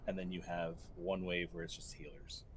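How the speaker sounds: normal talking voice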